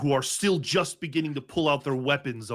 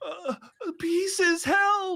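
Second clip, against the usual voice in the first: put-on shrill, very high child's scream. Voicing a little girl who screams for help: little girl screaming for help. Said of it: "The little girl screaming".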